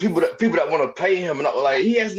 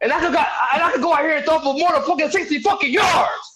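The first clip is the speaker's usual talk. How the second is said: loud, very high, excited, worked-up ranting; 9 semitones higher than usual. Ranting in a group conversation, getting loud and excited. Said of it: "I'm getting loud".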